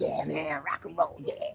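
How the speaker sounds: put-on American accent by an English speaker. Retelling what the manager said: imitating manager's american accent.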